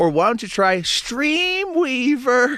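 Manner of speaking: voice cracking, breaking very high. Talking about watching streamers and suggesting a name, voice cracking. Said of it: "break in the voice".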